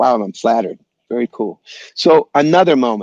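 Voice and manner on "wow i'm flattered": plain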